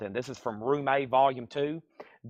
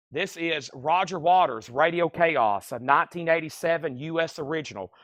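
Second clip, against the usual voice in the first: ordinary delivery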